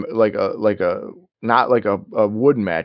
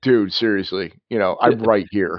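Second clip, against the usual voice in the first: plain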